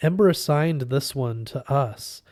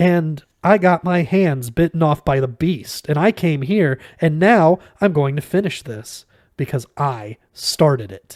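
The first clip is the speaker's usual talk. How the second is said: higher-pitched, aggrieved, self-righteous voice; 3 semitones higher, 7 dB louder than usual. Reading a character's protest after losing his monk voice: higher-pitched aggrieved, self-righteous voice. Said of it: "spoke in his old, higher-pitched voice".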